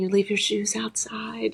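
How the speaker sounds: hushed half-whisper, under the breath. Retelling how people in a yoga studio corrected her: imitating someone half-whispering.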